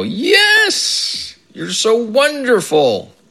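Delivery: put-on, very high, delighted squeal, slow and dragged out. Retelling how a father with Alzheimer's screamed with glee: imitating a gleeful scream. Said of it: "he would scream with glee and go".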